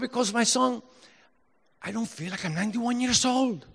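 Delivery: very high-pitched, put-on Spanish accent. Quoting what a 91-year-old man would say to his son, in a put-on Spanish accent. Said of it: "he would say in his Spanish accent".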